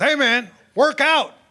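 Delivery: put-on high holler. Telling a story about being high, imitating his friend yelling at him. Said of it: "And he yells at me".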